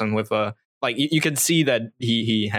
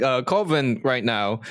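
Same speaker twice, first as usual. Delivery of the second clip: ordinary talk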